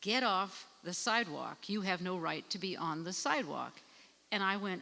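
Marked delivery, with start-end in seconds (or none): none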